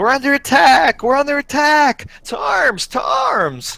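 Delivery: very high, top-of-the-lungs, full-lung alarm scream. A clumsy halfling stumbles around the corner and falls, screaming at the top of his lungs. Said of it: "screaming at the top of his lungs".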